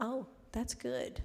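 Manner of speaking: spoken really softly and low-key. Retelling a phone call with a grant applicant: imitating someone speaking softly. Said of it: "he's speaking really softly".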